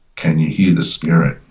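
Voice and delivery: ordinary talk, nothing marked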